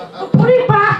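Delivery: very high, snapping angry voice, poorly done. Retelling the wife's reaction in a supermarket, imitating the wife snapping. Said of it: "I told me voices of shit".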